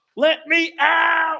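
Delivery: put-on very high-pitched, shrill screaming toddler voice. Retelling a girl's meltdown in her car seat, imitating a child screaming. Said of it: "Like screaming in her car seat".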